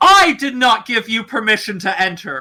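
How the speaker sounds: full bellow, shouted out. Game narrator voices Azora shouting at someone, Azora bellowing a shout. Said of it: "Azora does just like bellow out, shout".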